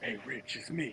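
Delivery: very hushed, secretive whisper. Skit where LeBron James secretly phones Rich, LeBron James whispering. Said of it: "why you whispering?".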